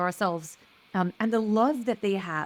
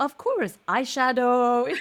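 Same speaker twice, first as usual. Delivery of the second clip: put-on Belgian-accented voice; 4 semitones higher, 4 dB louder than usual. Imitating a grandmother joining the conversation: imitating grandmother's belgian accent. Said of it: "With the Belgian accent".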